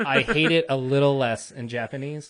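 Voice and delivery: ordinary talk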